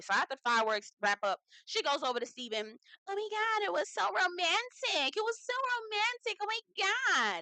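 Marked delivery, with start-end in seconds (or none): 3.1-7.4 very high, slow, whiny, gushing voice. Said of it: "in a whiny, whiny voice".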